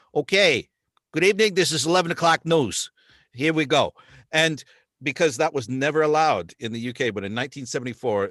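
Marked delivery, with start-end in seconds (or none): 0.1-3.9 loud, pitched-up, put-on New Jersey newscaster voice. Showing how a regional newsreader from Jersey would sound: imitating a New Jersey accent. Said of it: "like somebody from Jersey going".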